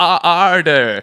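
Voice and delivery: machine-like synthetic voice. Describing a sex robot's lines, the speaker does them in a Stephen Hawking voice. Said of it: "that Stephen Hawking voice going".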